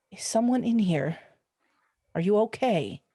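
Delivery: calm, careful, steady delivery. Speaking in character to a hidden woman: very quiet and calm. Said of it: "I'm going to say very quietly and calmly".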